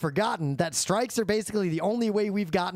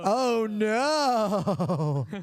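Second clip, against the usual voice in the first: very sarcastic dismayed tone, no drawn out; 2 semitones higher than usual. Retelling a coworker's reply about the strike: retelling a sarcastic "oh no". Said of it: "a very sarcastic".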